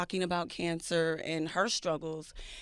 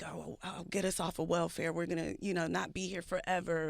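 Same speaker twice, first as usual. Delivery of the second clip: acted-out whispering. Retelling what mother would say to the children: imitating mother whispering. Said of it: "my mother would, like, whisper to us".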